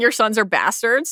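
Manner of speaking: normal talking voice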